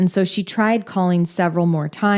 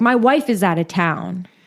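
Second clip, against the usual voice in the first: acted-out tantrum, mock outburst. Retelling how a man argued with a bank teller, acting out his fit. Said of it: "Scott threw a fit".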